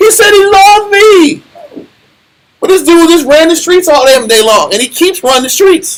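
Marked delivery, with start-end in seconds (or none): 0.0-1.4 mock tearful, high, slow crying and bawling voice. Describing a woman who chose a thug, imitating someone crying. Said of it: "she's crying and bawling".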